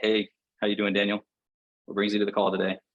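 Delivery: listless, joyless, flat, gloomy monotone. Acting out a bad sales call opener: mock-gloomy, flat tone. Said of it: "nobody wants to buy from Eeyore the donkey".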